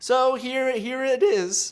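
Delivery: voice cracking. About to read Patreon shoutouts, the speaker's voice cracks. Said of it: "my voice cracked".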